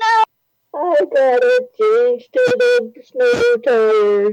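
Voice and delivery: dramatic and drawn out. Retelling how a husband reacts to snow outside the window: imitating husband's dramatic reaction.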